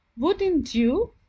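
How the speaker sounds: voice lifts slightly at the end of "wouldn't you". Teaching how a question tag sounds, demonstrating rising intonation. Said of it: "my voice went slightly up".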